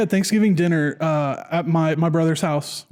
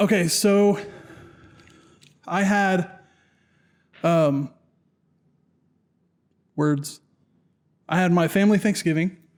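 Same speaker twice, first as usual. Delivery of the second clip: out of breath, breathless. Answering how Thanksgiving went after moving around: out of breath. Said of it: "I'm out of breath".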